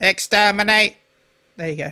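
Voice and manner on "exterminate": mechanical, robotic machine monster voice. Trying out impressions, says the word in a Dalek voice. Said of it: "I can sometimes do Dalek".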